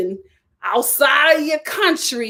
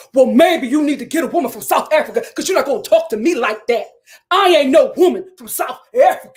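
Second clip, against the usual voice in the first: put-on angry, squared-up, confrontational changed voice. Retelling an argument a woman had with her husband: imitating a changed, confrontational voice. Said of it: "Then her voice changed".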